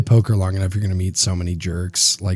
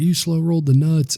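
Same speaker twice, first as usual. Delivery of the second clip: put-on, very high-pitched, shrill screaming; 9 semitones higher than usual. Retelling what another poker player yelled at the table: imitating someone screaming. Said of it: "started screaming at me".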